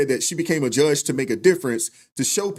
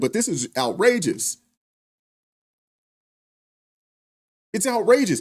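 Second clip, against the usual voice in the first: disbelieving, incredulous words spoken through laughter; 4 semitones higher than usual. Reacting to a judge releasing a repeat attacker again, laughing while talking. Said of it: "I'm sorry I'm laughing".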